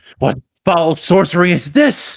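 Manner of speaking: acted, high, yelled-out outcry. Voicing Shinichi in the game, calling out: Shinichi yelling. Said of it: "Shinichi yells out".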